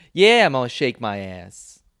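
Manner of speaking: cartoony, over-the-top, thick East Coast accent. Joining a bit mocking movie East Coast accents, exaggerated East Coast accent. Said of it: "You sound like Mark Wahlberg".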